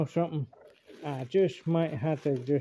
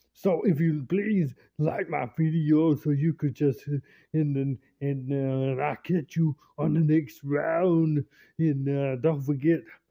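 put-on Austrian accent; 4 dB louder than usual. A video creator signs off to viewers, doing Arnold voice. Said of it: "why am I doing his voice for?".

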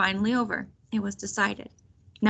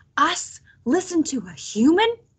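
faint scandalized disbelief, very slow, pitched up, swooping; 7 semitones higher than usual. Violet, stunned in the silence that followed, speaks in a faint, outraged voice. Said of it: "she kept saying in a faint, outraged voice".

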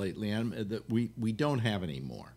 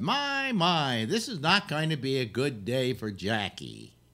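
put-on cheery newsreel narrator voice; 3 semitones higher, 3 dB louder than usual. Imitating a newsreel narrator describing a parade: Pete Smith impression. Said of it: "he talked like".

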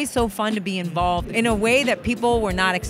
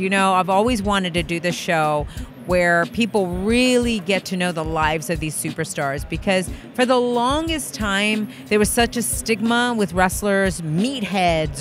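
ordinary talk, nothing marked

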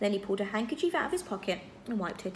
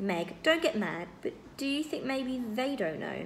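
plain

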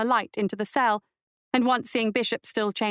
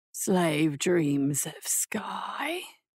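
very slow, halting, low, guttural, unpracticed-sounding speech; 4 semitones lower, 4 dB quieter than usual. A narrator reads a voice speaking from behind a woman: guttural, unpracticed voice. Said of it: "The voice behind her was guttural and unpracticed".

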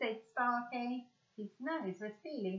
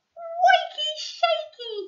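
very high, loud, excited gasped-out cry; 14 dB louder than usual. A pet dragon leaps up on fire station open day, gasping. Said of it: "he gasped".

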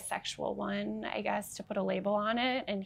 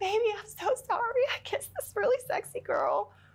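tearful, sobbing, crying voice pitched way up; 13 semitones higher, 4 dB louder than usual. Retelling calling a partner from the bar: retelling a sobbing apology. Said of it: "I called him from the bar sobbing".

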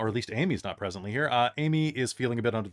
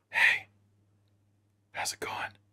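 in a whisper. The speaker demonstrates to the audience how they whisper. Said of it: "That's how I whisper".

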